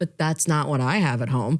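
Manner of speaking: normal talking voice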